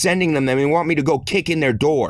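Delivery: ordinary delivery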